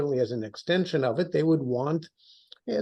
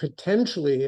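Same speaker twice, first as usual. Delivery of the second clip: emphasis on potentially. Explaining what the U.S. will want from the Saudis, stressing "potentially". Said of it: "I stress the word potentially".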